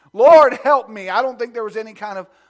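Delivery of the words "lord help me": very loud, full-voiced, desperate begging cry. Retelling how a woman called on the Lord: acting out pleading. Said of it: "I believe she was pleading with him".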